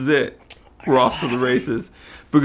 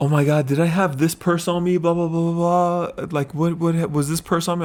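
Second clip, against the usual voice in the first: put-on flustered, alarmed, panicked, frantic rambling; 4 semitones higher than usual. Speaker retells a cocktail waitress calling them in a panic, imitating a panicked voice. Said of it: "she calls me in a panic".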